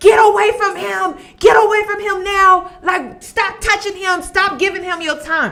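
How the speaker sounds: put-on high, insistent yelling. Retelling yelling at an ipad while watching the show: retelling yelling at the screen. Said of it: "I'm in my house yelling at my iPad".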